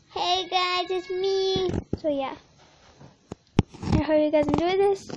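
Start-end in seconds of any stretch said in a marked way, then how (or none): 0.2-1.7 put-on very slow, drawn-out little child's voice. Introducing the voices for the video to viewers, now the child's voice. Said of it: "this is gonna be the child's voice".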